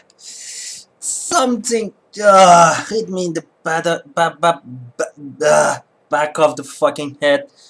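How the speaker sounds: repeated ba- stammer before back. Telling another character about being hit on the head: stuttering. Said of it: "now I'm stuttering".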